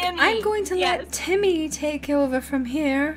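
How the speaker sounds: put-on British accent. Retelling how a woman handed over to Timmy, quoting her in a British accent. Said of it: "this British voice is like".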